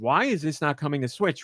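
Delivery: normal talking voice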